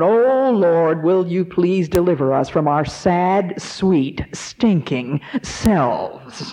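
slow, drawn-out, deliberate mock yell. Retelling how Mister Maxwell stood up in a prayer meeting: imitating a yell into a microphone. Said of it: "he just yelled into the microphone".

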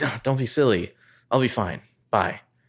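strained, pained hiss through the words. Retelling a character's reply to an offer of help: imitating a pained hiss. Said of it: "She kinda hisses and she's like".

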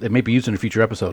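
spoken really fast, rattled off.

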